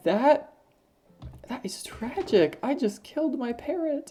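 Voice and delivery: high-pitched, teary voice right on the edge of crying. Reacting after accidentally killing the parrot in the game: on the verge of tears. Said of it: "actually about to cry in real life".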